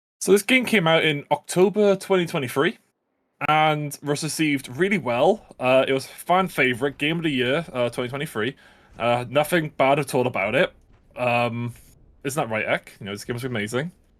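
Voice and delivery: ordinary talk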